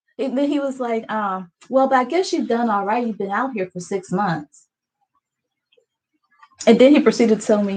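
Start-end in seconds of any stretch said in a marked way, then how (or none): none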